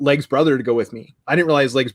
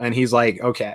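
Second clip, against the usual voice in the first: ordinary delivery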